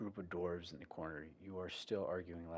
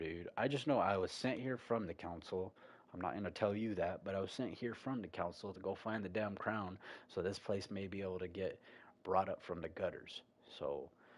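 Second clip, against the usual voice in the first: ordinary talk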